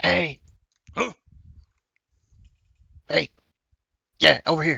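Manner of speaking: speaking in a whisper. A player's character approaches the Ifriti and calls him over, whispering. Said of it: "whisper to him".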